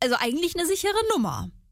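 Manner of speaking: eigentlich stressed, high and quick.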